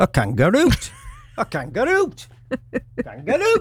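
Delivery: put-on Geordie accent. Telling a joke about a geordie stuck in a lift: geordie accent. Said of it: "Good Geordie accent".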